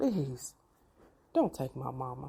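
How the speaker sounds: soft, desperate mock begging plea. Retelling a prayer at the hospital for the speaker's mama; retelling begging. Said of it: "I beg God".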